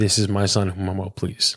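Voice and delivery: ordinary delivery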